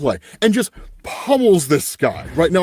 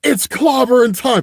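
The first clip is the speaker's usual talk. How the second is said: mock yell, higher; 7 semitones higher, 3 dB louder than usual. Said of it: "yelling out".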